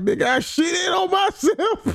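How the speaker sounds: shout with laughter.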